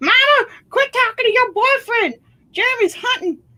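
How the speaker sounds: put-on very high crazy old lady voice. Joking after mentioning a student yelling: put-on crazy old lady mom voice. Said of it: "this crazy old lady mom".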